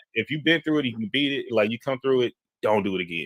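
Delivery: ordinary delivery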